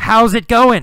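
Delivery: high-pitched, loud shouted yell. Explaining yell versus whisper, acting out how Carlos greeted someone: yelling. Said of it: "Carlos yelled".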